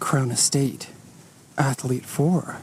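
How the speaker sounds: whispered, hushed, breathy ad announcer commercial voice. Speaker looking over a used car names the model, in a commercial voice. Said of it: "That's my commercial voice".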